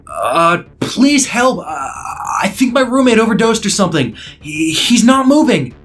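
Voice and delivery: half yelling, acting terrified and surprised. Reading a story where the narrator calls 911: half yelling, acting terrified and surprised. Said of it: "I half yelled on the phone, acting as though I was terrified".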